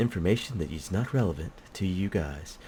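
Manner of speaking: soft on-air radio announcer voice. Telling viewers an aside that is not relevant: radio voice. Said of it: "I said that in my radio voice".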